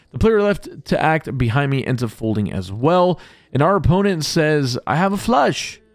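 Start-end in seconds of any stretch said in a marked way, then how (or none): 4.8-5.7 bad put-on Russian accent, pitched up. Poker player quotes an opponent announcing his hand, in a bad russian accent. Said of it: "in the much more Russian accent".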